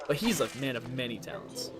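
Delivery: plain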